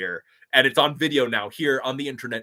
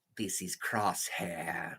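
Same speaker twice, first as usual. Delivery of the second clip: hushed, barely whispered, strongly nasal voice; 5 semitones lower, 14 dB quieter than usual. Doing Clone Trooper voices one after another: nasal Crosshair voice. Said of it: "Crosshair's more in the nose".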